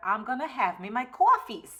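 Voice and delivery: New York accent, slipped in. Talking to viewers about drinking coffee even in hot weather, sounding New Yorkish. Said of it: "That sounded very New Yorkish".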